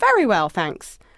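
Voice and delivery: normal talking voice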